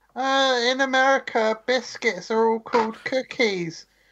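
put-on high mocking voice. Parroting the man you're talking with, mocking higher-pitched voice. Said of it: "Why'd you do like a higher pitched voice for me".

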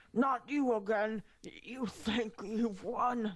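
slow wheezing through failing breaths. Narrating a game scene, voicing the dying Vohal, wheezing. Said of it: "he wheezes".

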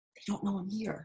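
whispering. Ezzie speaks to the injured guide she has just noticed, whispering.

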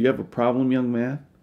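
angry, confrontational, squaring-up delivery. Retelling what an angry man at a group meeting asked: imitating an angry man. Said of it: "And he was mad".

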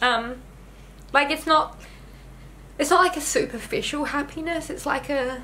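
high-pitched, tearful speech while crying. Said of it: "but I'm crying".

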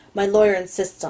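ordinary delivery

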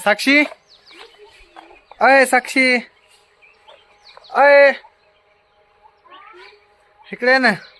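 loud, high, carrying calling voice.

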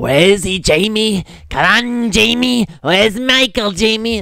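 loud, high-pitched, frantic, pressing hard. Describing a movie, act out Loomis questioning a scared Jamie, as a Loomis impression. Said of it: "That's my Loomis impression".

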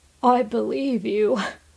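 laughing slightly, light chuckle in voice. Answering a companion's remark about a knight, with a slight laugh. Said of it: "Jonathan said with a slight laugh".

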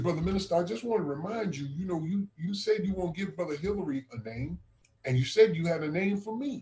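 ordinary talk

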